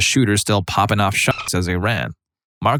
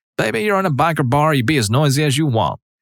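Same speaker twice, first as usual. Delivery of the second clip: put-on drawling Georgian accent; 7 semitones higher than usual. Retelling the waitress's reply to an apology: heaviest, sweetest Georgian drawl. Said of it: "She replies in the heaviest, sweetest Georgian drawl".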